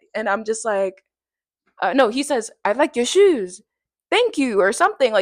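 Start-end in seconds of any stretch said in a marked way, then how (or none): 2.7-4.6 English with put-on French accent. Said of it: "what I'm doing is a French accent".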